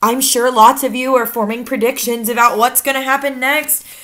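ordinary delivery

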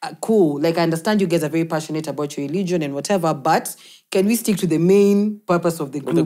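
ordinary delivery

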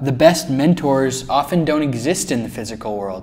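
ordinary delivery, nothing marked

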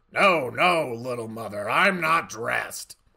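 rough, gravelly, rasping voice. Narrator voicing a comic answering an actress at his door: gravelly voice. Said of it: "the comic's gravelly voice could be heard".

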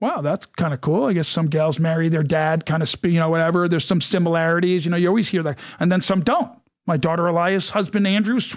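ordinary talk, nothing marked

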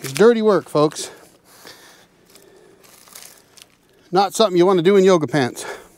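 breathing heavily. Working a log on the mill while talking to viewers, breathing heavily. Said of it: "Yes, I'm breathing heavy".

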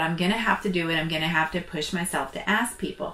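normal talking voice

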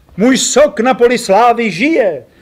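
drawn-out exclamation. An injured man, failing to get up, calls out on seeing the narrator; exclaimed.

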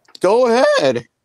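voice cracking into a very high squeak. Encouraging the other speaker to go ahead, with voice cracking. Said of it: "my voice just cracked".

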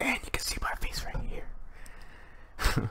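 slow, breathy, hushed whisper, barely voiced. Imitating own old video line, kinda whispering. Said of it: "kinda whispering".

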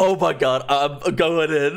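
slow, hyped-up, drawn-out screaming. Player recalling hyping themself up on voice chat, retelling own scream. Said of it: "Then I would scream in voice".

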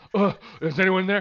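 frantic, loud, high-pitched grunting call. Retelling a man smacking on toilet stalls, imitating him grunting. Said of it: "smacking on stalls, like, going".

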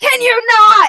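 very shrill, very loud, very high, crazed deranged shriek. A player voices a villain trying to intimidate a customer, crazed. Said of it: "Just like crazed".

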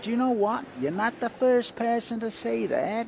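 very high, shrill, loud put-on New York accent. Retelling what a man told him when he arrived in Puerto Rico, in a New York accent. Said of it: "That's my New York accent".

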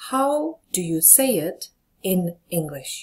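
slow, carefully spaced, word-by-word delivery.

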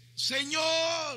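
shouting voice.

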